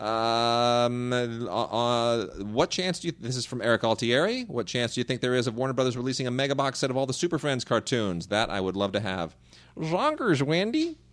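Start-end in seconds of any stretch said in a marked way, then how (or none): 9.8-11.0 very high-pitched cartoon-style voice. Talking about Super Friends cartoons, doing a Marvin impression. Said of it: "That's my best Marvin impression".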